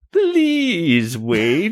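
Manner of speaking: very high, swooping, squealing toy pig voice. Narrator voicing a stuffed pig as two characters back away: squealing stuffed pig voice. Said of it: "squeals the pig".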